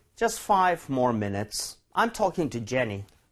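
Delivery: very slow, careful reading, word by word. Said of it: "본문도 읽어볼게요".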